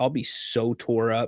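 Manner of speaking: usual speaking voice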